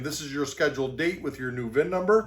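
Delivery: ordinary delivery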